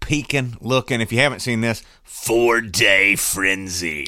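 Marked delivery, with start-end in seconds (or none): 2.1-4.1 monster truck promo announcer voice. Speaker reads an item off a list to Jay in a monster truck voice. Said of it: "I did the monster truck voice".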